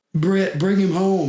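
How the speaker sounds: very high, sobbing, tearful, pleading voice. Retelling a phone call where the wife picks up: imitating someone crying. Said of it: "She's crying".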